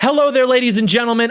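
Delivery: projected, loud, high, energetic on-camera presenter voice. Showing the voice used for YouTube, unlike normal speech: projected YouTube presenter voice. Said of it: "I have to talk like this, and this is not how I speak".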